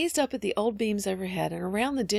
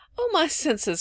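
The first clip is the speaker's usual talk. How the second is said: high little cry with a little laugh; 7 semitones higher, 3 dB louder than usual. Polly answers the child Phronsie: cried with a little laugh. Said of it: "cried Polly with a little laugh".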